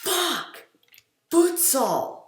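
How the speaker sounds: very high, sudden, blurted shout. Retelling what he shouted in class as a second grader, retelling a shout. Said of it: "I just shouted".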